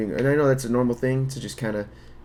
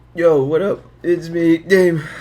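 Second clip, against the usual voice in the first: very loud, voice breaking upward; 6 semitones higher, 10 dB louder than usual. Greeting listeners and introducing himself, voice cracking. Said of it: "Voice crack".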